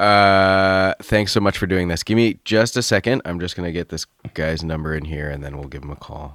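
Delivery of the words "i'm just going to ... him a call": low, soft, tired, exhausted voice. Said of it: "You sound so tired".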